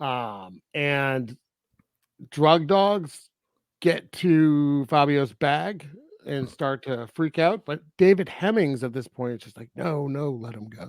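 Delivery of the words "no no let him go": soft, under-the-breath undertone. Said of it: "Like, under his breath".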